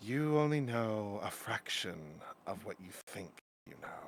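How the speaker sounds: soft yet authoritative feminine voice. Narrating a scene, the speaker gives a disembodied voice's words: soft authoritative feminine voice. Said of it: "A slightly soft, but more so authoritative, feminine voice".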